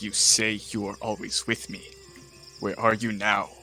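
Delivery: whispered, in a character voice. Holding an orb to the forehead in character, whispering to himself. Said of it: "hold the orb up to my forehead and whisper to myself".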